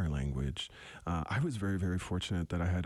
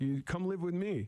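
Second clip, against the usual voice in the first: put-on high, teasing elderly voice. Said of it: "she actually made fun of me".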